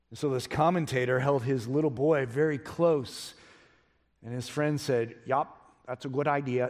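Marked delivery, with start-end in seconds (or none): 5.2-6.7 put-on South Dakota accent. Retelling what a commentator's friend said by a cliff, South Dakota accent. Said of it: "like my South Dakota accent".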